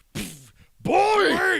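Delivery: high, loud, furious barking shout. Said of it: "Kratos actually goes angry that moment and goes".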